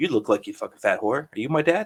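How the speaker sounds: put-on bone-dry, dead-serious deadpan delivery. Retelling a teenage prank on people in the street: imitating a deadpan delivery. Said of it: "deadpan face".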